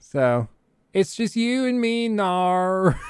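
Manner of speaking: slow put-on Australian accent, nar stretched long. Telling viewers about a TikTok guy who does musical clips: imitating TikToker's Australian accent. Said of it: "but he does it in an Australian accent".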